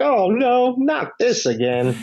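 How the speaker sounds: very high, very slow, swooping drawn-out yell. Recapping a film scene where a man bursts into flames, retelling a yell.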